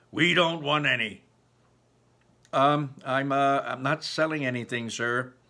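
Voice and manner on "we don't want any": rough, gruff, dismissive tone. Narrator reads the man in the room answering a knock: gruff voice. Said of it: "A gruff voice announces".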